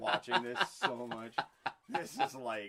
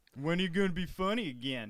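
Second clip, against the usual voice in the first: stupid rube voice; 6 semitones higher, 5 dB louder than usual. Joking with a co-host about the show, in a stupid rube voice. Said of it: "This is my like stupid Rube voice".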